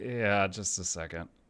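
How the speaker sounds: put-on shamed, shamefaced voice. Retelling how a man answered the phone: imitating a shamed voice. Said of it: "with just shame dripping out of his voice".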